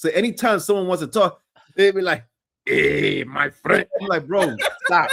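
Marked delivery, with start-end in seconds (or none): 2.7-3.9 put-on movie-style Spanish-accented English. Imitating how people talk to him, in a Tony Montana accent. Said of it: "the Tony Montana accent and the Tony Montana voice".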